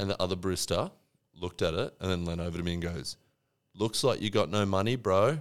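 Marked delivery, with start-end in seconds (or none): 3.8-5.4 put-on blunt tone, loud enough to carry. Retelling how a barista leaned over and spoke: imitating a loud remark. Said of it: "Like, quite loud".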